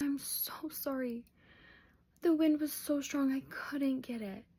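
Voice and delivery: saddest, defeated, sorry-sounding voice. Retelling how Dad apologized for losing the application: imitating dad's sad apology. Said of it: "with the saddest face".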